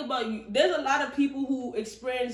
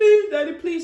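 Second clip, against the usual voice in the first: mock very loud, high-pitched begging; 6 semitones higher, 10 dB louder than usual. Retelling a book's plot, voicing Hannah as she begs her parents: Hannah begging voice. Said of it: "Hannah start begging".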